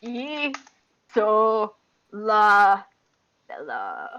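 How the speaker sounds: awestruck bear voice, each syllable drawn out slowly. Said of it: "his beady, like, shark eyes, like, looking at her is like".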